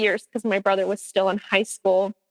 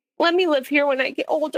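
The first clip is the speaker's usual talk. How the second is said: acted tearful pleading voice, higher; 7 semitones higher than usual. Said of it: "he was just in tears".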